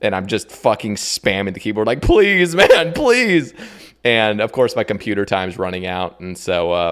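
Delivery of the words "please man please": very high, raised, tearful sobbing voice. Retelling begging another player after a trade, imitating own sobbing plea. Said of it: "I was literally sobbing at the computer".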